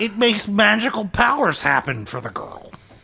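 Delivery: put-on high-pitched nerdy scientist voice. Friends joke about women being mysterious; one answers in a nerdy scientist voice. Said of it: "That's my nerd scientist voice".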